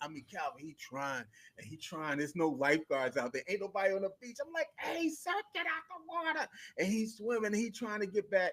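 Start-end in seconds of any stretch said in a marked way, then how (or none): 4.8-6.5 play-acted very high-pitched scream. Retelling a warning to a man stuck in a rip current: imitating himself screaming. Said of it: "I start screaming".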